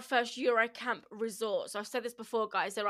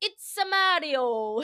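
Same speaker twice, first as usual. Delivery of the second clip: sudden, loud, high blurt with one word drawn out; 5 semitones higher, 5 dB louder than usual. Retelling a child blurting out a name at a cocktail bar: Mario impression. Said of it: "He done the whole impression".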